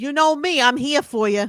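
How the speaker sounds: put-on New York Long Island accent. Talking about someone they know from Long Island: imitating Melissa Belfiore's accent. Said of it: "she has the best accent of anybody".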